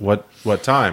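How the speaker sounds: ordinary talk, nothing marked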